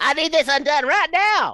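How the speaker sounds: squeaky, shrill, very loud miniature hillbilly voice. Playing a hobgoblin just shrunk a size: miniature hillbilly voice. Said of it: "you sounded like, like a miniature hillbilly".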